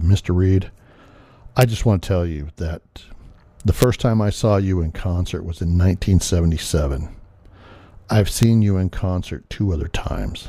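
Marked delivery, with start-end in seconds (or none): none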